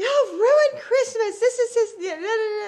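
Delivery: shrill, very high, loud, furious hollering. Retelling waking up and yelling at the kids at Christmas: imitating herself hollering. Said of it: "I start hollering".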